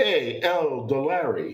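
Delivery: Brooklyn accent on one word. Showing how a horse's name would sound: brooklyn accent. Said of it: "I would have said it like from Brooklyn".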